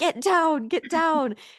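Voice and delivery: very high, shrill, loud acted-out shout. Retelling yelling at the TV while watching: imitating own yelling. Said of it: "yelling at my T V".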